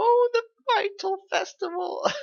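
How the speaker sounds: put-on very high little old lady voice. Speaker quotes a character from a scene, old lady voice. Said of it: "making her sound like an old lady".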